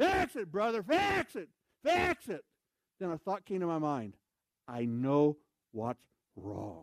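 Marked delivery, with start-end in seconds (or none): 0.0-2.4 put-on shrill, very high, repeated yell. Retelling a man trying to get the speaker's attention, retelling someone yelling.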